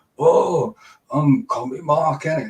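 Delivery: high, taunting mock parody voice. Describing how his fans imitate him, doing their mock voice of him. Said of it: "they do a mock voice of me".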